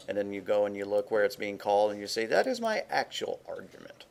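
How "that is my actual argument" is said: put-on snobby, sniffy, high, swooping tone. Showing how to point out an argument in code, mock snooty tone. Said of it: "you have to say it with a snooty tone".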